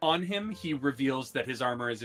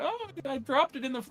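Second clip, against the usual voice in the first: very high, pushed-up, gawky cartoon teenage voice; 11 semitones higher than usual. Showing how the teenage character from The Simpsons sounds. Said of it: "imagine Beverly's voice first as the, the teenage character from The Simpsons".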